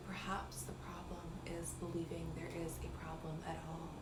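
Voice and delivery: put-on, trance-inducing hypnotist tone. Retelling a voice note left for someone, put-on hypnotic voice. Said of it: "in my most hypnotic voice".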